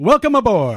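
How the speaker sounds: excited, pumped-up, hyped, very loud. Podcast host, told to sound more hype, redoes the welcome: more hyped. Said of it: "sound a little bit more hype".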